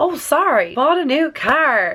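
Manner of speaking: high, slowed, really excited blurt.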